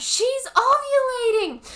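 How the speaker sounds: yelled out high, loud and slow.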